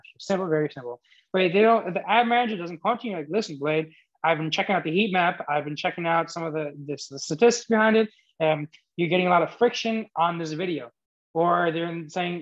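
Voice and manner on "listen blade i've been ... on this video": normal talking voice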